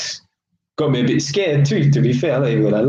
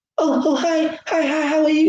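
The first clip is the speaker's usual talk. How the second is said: very high-pitched, feminine, posh voice; 14 semitones higher than usual. Mocking how a man must sound on a professional phone call: feminine high-pitched voice. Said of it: "you have to talk all like feminine and high pitched".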